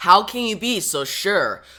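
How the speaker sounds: usual speaking voice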